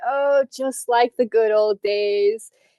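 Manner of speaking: playful teasing tone, laughing to himself. An old man watches a player pick up a soft pretzel; teasing, laughing to himself. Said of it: "saying it in like a very like teasing way".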